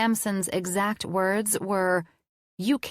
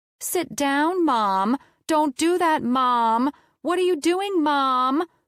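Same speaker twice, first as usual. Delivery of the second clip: annoying, taunting, high, drawn-out mocking voice; 6 semitones higher, 4 dB louder than usual. Reading a story aloud, a character mocks the narrator: high-pitched mocking voice. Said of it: "Mocking me in a high-pitched, annoying as hell voice".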